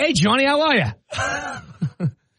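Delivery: put-on very drawn out, slow, swooping Boston accent. Quoting a man from a car commercial to the other hosts, in a boston accent. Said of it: "Great Boston accent".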